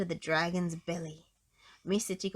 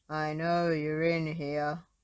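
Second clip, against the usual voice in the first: very deep, slow, rumbling bass voice; 3 semitones lower than usual. Narrator reading a story, voicing an unseen speaker, in a very deep rumbling voice. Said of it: "rumbled a very deep voice".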